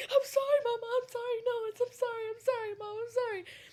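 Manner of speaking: mock frantic, high, panicked pleading tone. Retelling hiding on a bunk bed as mom flung the door open; retelling panicked apology. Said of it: "I panicked".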